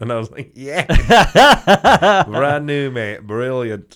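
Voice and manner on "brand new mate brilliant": put-on Barnsley accent, put on. Repeating back what a voice in the room said, in a Barnsley accent. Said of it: "attempt at a Barnsley accent".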